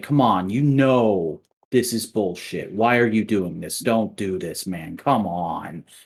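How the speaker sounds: acted, mock impassioned, passionate pleading. Describing how a character would plead with a guy, acting out an impassioned plea. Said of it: "make a very impassioned plea".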